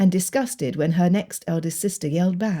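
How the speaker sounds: ordinary delivery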